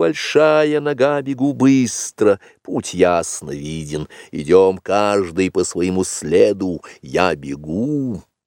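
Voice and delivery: ordinary talk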